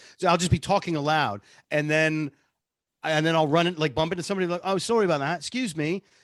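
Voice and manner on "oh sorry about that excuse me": put-on British accent, higher pitch. Retelling bumping into somebody at the shop: Nigel voice with British accent. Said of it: "when Nigel really comes out".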